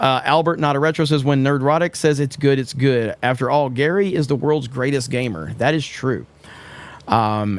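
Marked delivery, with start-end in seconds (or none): none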